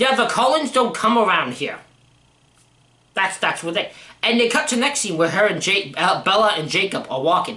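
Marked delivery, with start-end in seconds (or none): 0.0-1.8 put-on, very loud delivery. Retelling a movie scene where one of the wolves speaks: imitating a very loud line. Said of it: "loudly, very loudly goes".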